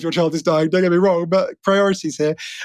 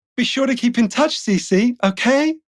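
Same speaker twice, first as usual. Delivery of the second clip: put-on prim, posh, well-to-do young girl voice; 4 semitones higher than usual. Reading a scripted line to Cece with a scene partner, in a posh little girl voice. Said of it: "she's meant to be like a little posh girl".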